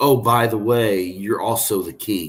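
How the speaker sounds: plain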